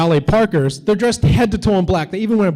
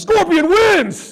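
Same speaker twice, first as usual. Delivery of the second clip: very high-pitched triumphant scream; 13 semitones higher than usual. Retelling a scream after seeing a road sign: retelling a scream. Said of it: "So I screamed out".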